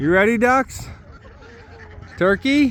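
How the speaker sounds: high-pitched coaxing call.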